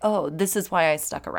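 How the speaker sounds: plain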